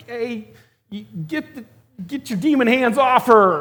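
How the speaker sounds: very high, loud, flustered, nervous stammering voice. Retelling people with trembling hands confronting a possessed person, George McFly impression. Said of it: "it really just sounded like George McFly".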